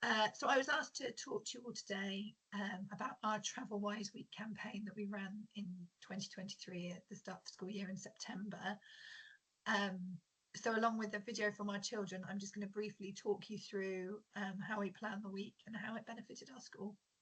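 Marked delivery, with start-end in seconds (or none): 2.5-8.8 croaky, half-whispered voice. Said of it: "apologies first of all for my croaky voice".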